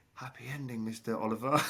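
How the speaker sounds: put-on whisper. Retelling creeping up behind someone at a massage: imitating his own whisper. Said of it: "I got whispered in the ear".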